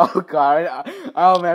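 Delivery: very slow words broken by high giggling laughter. Reacting to an article's odd wording, laughing while talking. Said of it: "if I laugh one more time".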